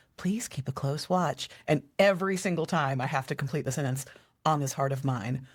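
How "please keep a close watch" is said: silky, smooth public-address announcer voice. Speaker imitates an overhead airport announcement, smooth Charlotte airport announcer voice. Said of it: "in the like smoothest, you know, voice goes".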